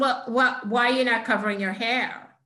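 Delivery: thick, well-done put-on Brooklyn accent. Retelling what a woman from Borough Park asked, thick Brooklyn accent. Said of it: "a good Brooklyn accent".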